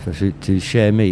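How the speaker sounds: ordinary talk, nothing marked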